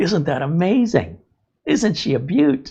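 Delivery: genuine, unsarcastic admiration. Imitating the plumber admiring a clog: imitating genuine admiration. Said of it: "genuinely admiring that".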